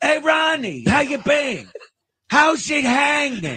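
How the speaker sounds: very high, drawn-out, swooping pitch. Asked to do Dice greeting Reagan, doing a Dice impression. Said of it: "if Dice walked into a room and said hello to Reagan".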